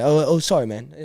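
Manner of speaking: put-on unhurried speech, British accent. Retelling Andrew Lincoln apologizing in the food line: Andrew Lincoln British accent. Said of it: "he's in his British accent".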